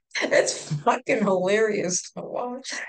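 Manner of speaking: laughter breaking into the speech. Describing someone who always locks her door on visits, laughing while talking. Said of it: "I'm laughing because I can literally see him".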